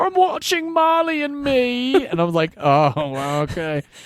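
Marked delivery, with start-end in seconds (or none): 0.0-2.1 bad Australian accent, pitched very high. Retelling a coworker's answer to his question, imitating Natalie in a terrible Australian accent. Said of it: "That's my terrible Australian accent for everybody".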